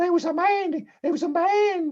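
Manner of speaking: high-pitched female voice. Voicing the wife character in a game, using a high voice for a woman. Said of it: "this high voice for women".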